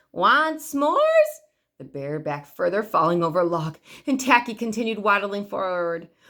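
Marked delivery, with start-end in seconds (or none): 0.2-1.4 muffled, very high calling voice. Narrator reads Tacky calling to the bear, in Tacky's muffled calling voice. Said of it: "in his muffled, calling voice".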